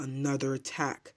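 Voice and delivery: plain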